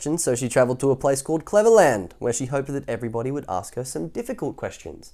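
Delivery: ordinary delivery, nothing marked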